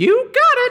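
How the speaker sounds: very high, loud cartoon voice calling out. Voicing the Meeseeks as it appears from the box: Mr. Meeseeks voice. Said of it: "as the Meeseek says".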